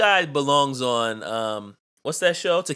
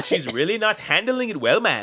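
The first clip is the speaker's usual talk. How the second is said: mock bad fake Jamaican accent, higher; 4 semitones higher than usual. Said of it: "this guy's obviously from Cleveland".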